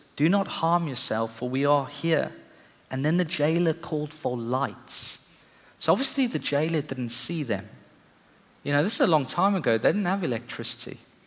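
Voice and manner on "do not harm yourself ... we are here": ordinary talk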